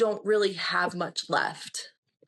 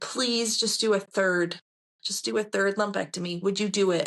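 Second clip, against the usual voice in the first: put-on pleading, begging tone. Retelling what was said to the surgeon: imitating own past begging. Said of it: "I just begged her".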